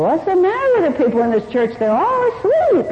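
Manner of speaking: very loud voice. Retelling what a drunk said walking into a meditating church, very loud voice. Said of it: "In a very loud voice".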